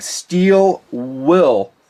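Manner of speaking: slow, careful, deliberate, with the second word drawn out. Naming a blade brand that is easy to get wrong, slowly: Steel Will. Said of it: "I got to say this slowly because it's easy to get it wrong".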